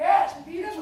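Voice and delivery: high, loud, eager agreeing voice.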